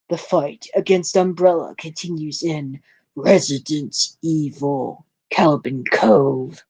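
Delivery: big, dramatic promo announcer voice. Reading a book preview aloud in best announcer voice. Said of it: "in my best announcer voice".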